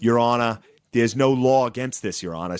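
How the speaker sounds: put-on Boston accent with an earnest pleading tone. Mimicking the defense lawyers at a trial addressing the judge, in a boston accent. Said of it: "they all have this like Boston accent".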